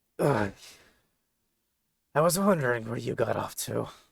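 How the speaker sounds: very raspy, rough, creaky, beat-up groan. Narrating a battered character who looks over his shoulder at you: very raspy voice. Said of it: "very raspy".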